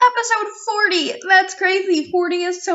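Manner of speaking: thrilled, excited, very high voice. Podcast host opening episode 40, excited. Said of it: "can you hear the excitement in my voice?".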